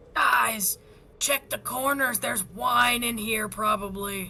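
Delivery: stage whisper delivered like a shout. Player character turns to the group, whisper-yelling. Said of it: "whisper yells and says".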